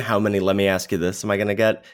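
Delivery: ordinary talk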